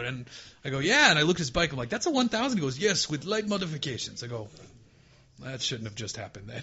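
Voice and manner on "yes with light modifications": put-on strong, high-pitched Eastern European accent. Retelling the East Coast editor's reply, in a very Eastern European accent. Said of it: "a very Eastern European accent".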